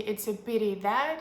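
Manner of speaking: plain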